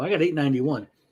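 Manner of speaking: ordinary talk, nothing marked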